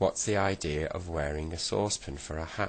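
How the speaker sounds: ordinary delivery, nothing marked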